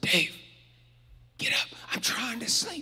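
distant, faint, breathy, barely-there whisper. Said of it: "I hear a faint whisper".

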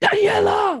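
very high, loud yell, called from afar. Retelling how her dad yelled her name from the car: imitating her dad yelling her name. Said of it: "he yells at me from the car".

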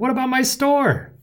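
shrill, very high bellow. The baker calls out as the crowd disperses, bellowed. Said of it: "bellowed the baker".

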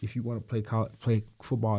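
normal talking voice

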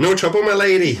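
put-on plainly spoken Irish accent. A man offering a lady a lift home answers her thanks in an Irish accent. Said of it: "It must be the accent. I just adore the Irish tongue".

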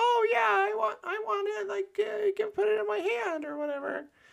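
very high, pitch-shifted voice. Retelling an ex doing other people's voices: imitating a super high-pitched voice. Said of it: "pitch shift his voice super high".

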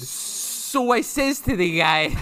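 accent from Rochester. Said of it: "give me your best Goomba accent".

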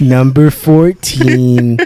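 slow narrator voice, every word drawn out. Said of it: "that voice".

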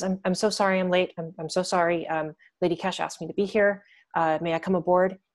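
slightly nervous, eager to please. Narrating a latecomer running up to the ship; a little nervous. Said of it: "she seems a little nervous".

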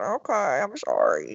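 cowed, meek, timid little voice. Retelling how a scolded bystander answered the officer: imitating a meek apology. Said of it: "like a little private just sitting there going".

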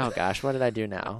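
ordinary talk

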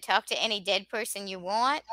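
ordinary talk

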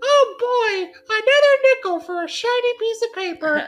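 very high-pitched, loud, cartoonish paperboy kid voice. Speaker offering to repeat a bit they just did, in the paper boy character voice. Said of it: "that's my paper boy voice".

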